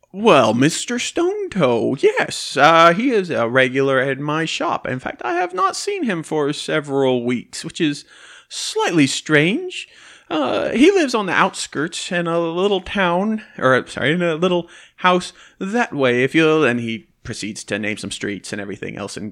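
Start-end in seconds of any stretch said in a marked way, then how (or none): 0.2-16.7 jolly, jovial shopkeeper voice, slow sing-song. Voicing a shopkeeper asked where Mr. Stone Toe is; jovial shopkeeper voice. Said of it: "he's a big old fat jovial man".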